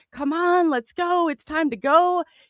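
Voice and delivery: mock, high-pitched, shrieked, screaming shout. Retelling facing a huge craft, the speaker quotes her neighbor by the car, imitating her screaming. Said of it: "She's screaming".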